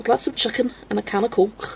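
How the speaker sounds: put-on Liverpool Scouse accent. Recalling a Graham Norton show video about teaching UK accents, imitate his Scouse accent. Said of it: "He was like, the Scouse".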